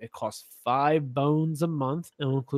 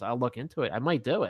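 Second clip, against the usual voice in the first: normal talking voice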